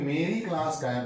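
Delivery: plain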